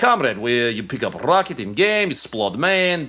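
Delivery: fake, put-on Russian accent. Retelling how a game kill feed was read aloud: mock russian accent. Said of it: "read it with a Russian accent".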